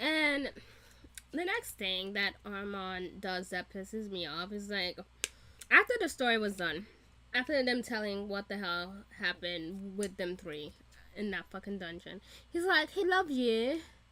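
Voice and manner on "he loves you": put-on plain British accent. Complaining about Armand after the dungeon story, the speaker mimics him: Armand in British accent. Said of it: "I have a British accent".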